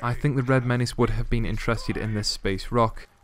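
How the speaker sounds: usual speaking voice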